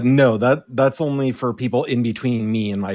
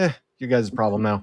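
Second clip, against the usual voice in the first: words carried on a tired, weary sigh; 4 dB quieter than usual. In character, giving up on a fight with a sigh: sighing. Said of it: "I'll just kinda sigh".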